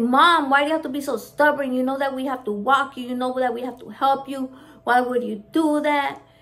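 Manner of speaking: furious, exasperated, angry scolding outburst. Retelling a fall, imitating Mandy's angry outburst. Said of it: "Mandy lost her shit".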